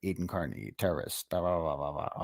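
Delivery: serious, grave true-crime documentary narrator voice. Imitating the voice a woman uses for serious documentaries: serious documentary narrator voice. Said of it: "the documentary voice she does too. The real serious ones".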